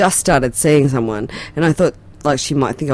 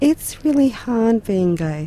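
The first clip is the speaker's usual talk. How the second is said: pitiful, high, pathetic-sounding voice; 8 semitones higher than usual. Talking about a small community, the speaker says this in a pathetic voice. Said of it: "can you do that pathetic voice again?".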